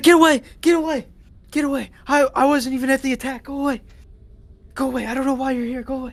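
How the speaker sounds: frantic, high, loud, panicked pleading. Game master voicing a kobold caught in a web, panicked and freaking out. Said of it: "It's like freaking out".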